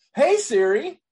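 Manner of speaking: very high, loud, beaming and cheerful. Speaker demonstrates saying the phone assistant's wake phrase in a happy-sounding voice. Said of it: "that sounds really, happy".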